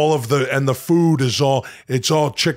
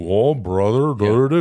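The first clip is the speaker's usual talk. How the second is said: sluggish, slow, drugged drawl; 2 semitones lower than usual. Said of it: "you start doing Chad's hydrocodone thing".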